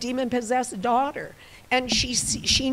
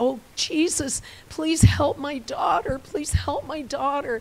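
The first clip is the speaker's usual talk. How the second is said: put-on crying out, higher; 2 semitones higher than usual. Telling the story of a woman who begs Jesus for help, retelling a woman crying out. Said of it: "she's crying out".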